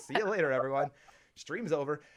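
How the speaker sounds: ordinary delivery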